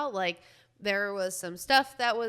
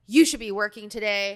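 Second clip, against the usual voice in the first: put-on livid anger, much louder; 7 dB louder than usual. Recounting a furious woman demanding someone work that day, acting out livid anger.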